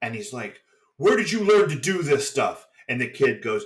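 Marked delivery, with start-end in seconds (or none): 1.0-2.7 yelling loud and high. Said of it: "starts yelling at him".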